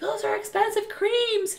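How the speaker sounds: high-pitched mock yell, scolding tone.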